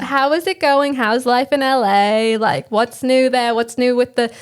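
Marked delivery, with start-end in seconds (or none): 0.0-3.5 bad fake put-on British English accent. Two hosts doing a mock show intro, greeting the guest in a fake British accent. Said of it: "our fake British accents".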